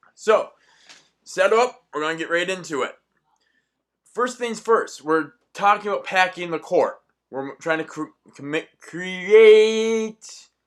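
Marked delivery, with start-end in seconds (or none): 7.3-10.4 stuttering, stammering, higher and louder. Starting to explain a topic and tripping over words: stuttering. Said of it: "hate having a lisp and a stutter".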